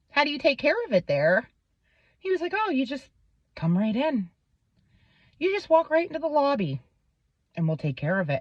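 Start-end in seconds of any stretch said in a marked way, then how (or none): 2.6-8.4 calm, creepy, eerily soothing tone. Retelling how the man answered his question, imitating a calm, creepy voice. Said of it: "this dude's voice was so calm and creepy".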